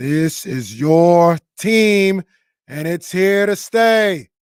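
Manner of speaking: put-on slight Boston accent, loud, slow, drawn out. Retelling what he said at center court on opening night, slight JFK-style accent. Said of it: "little J F K to it".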